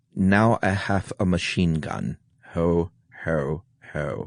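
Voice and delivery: put-on slow drawl in a German accent. Asked to say it in a German accent, doing Alan Rickman German accent. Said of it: "I'll say it with my best Alan Rickman".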